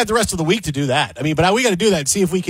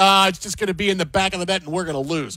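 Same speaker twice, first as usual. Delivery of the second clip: usual speaking voice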